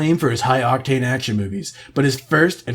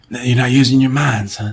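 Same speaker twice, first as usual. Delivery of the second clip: put-on tough-guy voice; 3 semitones lower, 4 dB louder than usual. Joining in on the bit: Steven Seagal impression. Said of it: "What would Steven Seagal impression be like?".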